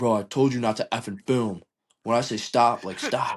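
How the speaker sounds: heated, upset, angry scolding. Retelling how the scared guy scolded the person filming him: mock-angry scolding. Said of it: "he got like so upset".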